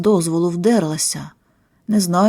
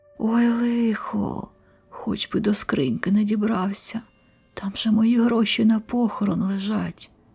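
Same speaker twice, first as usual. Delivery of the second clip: soft, hushed half-whisper under the breath; 2 semitones higher, 5 dB quieter than usual. Narrator reads a grandmother's line as a water spirit searches the house, half-whispering. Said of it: "прошепотіла бабуся".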